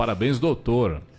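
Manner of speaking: ordinary talk, nothing marked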